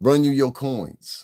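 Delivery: slow, put-on, old-school Brooklyn street accent. Repeating a woman's line: imitating a Brooklyn accent. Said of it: "That's some Brooklyn shit".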